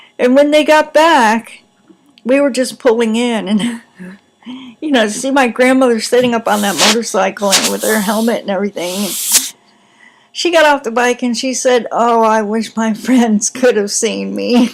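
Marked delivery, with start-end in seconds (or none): 11.9-14.7 words shaken by laughter throughout. Retelling what grandmother said after a motorcycle ride, laughing while speaking. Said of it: "I'm laughing and it's shaking the computer".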